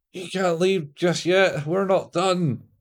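high, loud shouting at the top of the lungs. Acting out a man screaming at someone in a cafe, retelling a scream. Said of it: "as he screams to the top of his voice".

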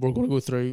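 voice breaking and cracking mid-phrase. Introducing the next part of the podcast, voice cracking. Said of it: "Nice wee voice crack there".

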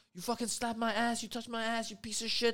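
acted high shouting. Telling a story, the speaker quotes a woman at the man who touched her: retelling her shouting. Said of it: "shouting at him".

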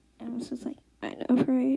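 ordinary talk

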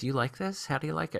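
half-whisper, soft, hushed, barely audible. Retelling asking the wife during the movie: imitating a half-whisper. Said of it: "I turned to her and whispered".

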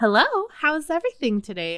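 very high, very loud, swooping put-on phone voice. Showing how people talk on the phone, in a higher-pitched phone voice. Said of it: "You have to talk in a higher pitch. So it's like your phone voice".

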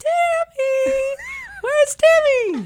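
very high, very loud, squealing camper voice. Repeating a phrase someone always said, as the group now does: imitating a high-pitched voice. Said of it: "he had a really high-pitched voice".

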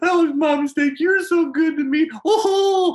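put-on blubbering voice. Imitating someone caught lying who keeps saying sorry: mock blubbering apology. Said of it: "blubbering, sorry".

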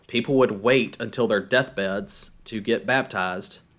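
ordinary delivery

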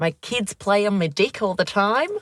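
put-on New Zealand accent. Quoting a guy from a meme video, imitating a Kiwi accent. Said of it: "Kiwi accent".

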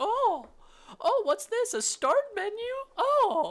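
very high, very slow, drawn-out, swooping sing-song. Retelling a Windows ninety-five commercial: Jennifer Aniston impression. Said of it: "That was my Jennifer Aniston impression".

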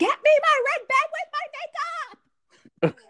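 furious, very high, drawn-out, angry yell. Retelling Aunt Fisa yelling from the car at George: imitating Aunt Fisa yelling angrily. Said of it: "she's yelling at him".

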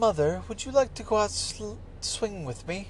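cute little cartoon accent. Describing how she talks, the speaker quotes her in a little Peppa Pig accent. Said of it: "it is a little Peppa Pig accent".

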